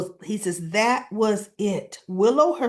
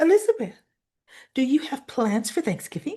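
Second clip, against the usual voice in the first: play-acted sweet, butter-wouldn't-melt innocent voice; 3 semitones higher than usual. Retelling what a woman asked you, in her mock-innocent sweet voice. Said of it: "she's in that innocent voice".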